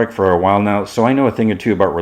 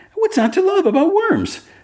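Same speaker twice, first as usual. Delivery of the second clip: very high, pitched-up character voice. Retelling a scene, quoting Jimmy Olsen: high-pitched Jimmy Olsen voice. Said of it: "And high pitch".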